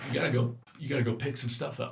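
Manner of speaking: put-on Alabama accent. Imagining what Matt would tell them to do, imitating Matt's Alabama accent. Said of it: "he's got this Alabama accent, and I know he'd go".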